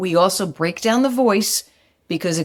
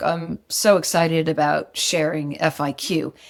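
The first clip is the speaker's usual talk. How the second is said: dull, flat, low, unexcited monotone with no life; 4 semitones lower than usual. Showing words and voice that don't match while claiming excitement: flat, unexcited voice. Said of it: "but yet my voice sounds like this".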